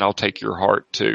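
put-on raspy voice. Describing a voice heard at a drive-through window; raspy voice. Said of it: "You hear like a raspy voice saying".

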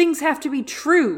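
high, loud, furious angry outburst. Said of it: "And he's like".

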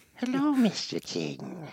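eerie, soft, swooping creepy housekeeper voice. After a nightmarish old tape comes up, the speaker mimics its housekeeper. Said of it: "that's totally the housekeeper".

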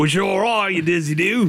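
over-the-top, exaggerated, cartoonish fake Australian accent. Chatting in a group about British beers: Simpsons-style Australian accent. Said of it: "That was super Australian".

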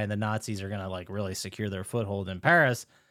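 ordinary talk, nothing marked

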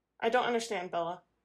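usual speaking voice

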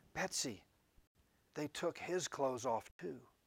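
hushed whisper. Telling a story, a woman leans forward to her sister, whispering. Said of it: "leaned forward and whispered to her sister".

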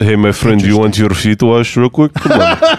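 animated, fake put-on Russian accent. Riffing on foot-washing in the bible as a character: put-on russian accent. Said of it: "The Russian guy".

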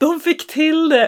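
very high, thrilled, overjoyed voice. Recounting phoning the dog's owner about a successful mating: retelling a joyful exclamation. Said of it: "Så vi var så glada".

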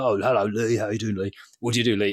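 lightly ribbing, mildly teasing, overly polite tone. Retelling meeting a builder and teasing him: retelling mild mocking tone. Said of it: "slightly took the piss out and was like".

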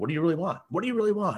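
high, insistent, pushing and prodding tone. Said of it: "I'm pushing him, I'm prodding him".

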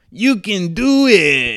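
high, slow, drawn-out yell. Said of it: "want to hear Rob Schneider yell".

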